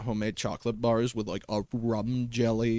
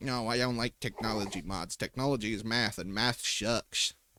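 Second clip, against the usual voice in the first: quieter put-on voice of a thirteen-year-old; 4 dB quieter than usual. Streamer recalling an old opinion about technology mods; impression of thirteen-year-old self. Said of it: "my impression of thirteen year old me".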